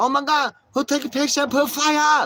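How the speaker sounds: very high, shrill, loud, freaked-out squawk. Describing a woman reacting to pictures of herself, imitating someone triggered. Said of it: "she's all triggered".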